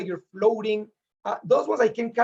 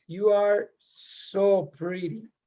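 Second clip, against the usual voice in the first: sultry, seductive, sexy voice. Prompted by a co-speaker to say it sexy, addressing someone directly: sexy voice. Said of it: "Say it sexy".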